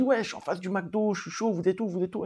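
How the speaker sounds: insistent, hard-pressing, super determined, pushy tone. Retelling a new volunteer's phone call: imitating a super determined tone. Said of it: "avec un ton, euh, voilà, super déterminé".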